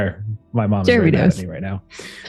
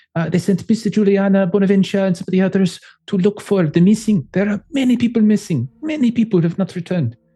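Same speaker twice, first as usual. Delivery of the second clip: over-the-top fake Italian accent, much higher pitch; 7 semitones higher than usual. Playing a character reporting to the master, in a completely offensive Italian accent. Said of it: "how do I do my completely offensive Italian".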